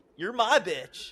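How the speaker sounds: yelling, high-pitched. Retelling how Kenny yelled at a rival on the show: imitating Kenny yelling. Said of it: "Yelling at him and stuff".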